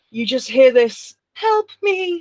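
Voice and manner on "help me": put-on very high, small, childlike little kid voice. Telling a story, voicing what she hears while falling asleep, in a little kid voice. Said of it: "Like a little kid voice".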